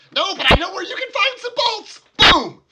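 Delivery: very high, loud, shrill, blaring mad scientist cackle. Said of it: "cackling maniacally".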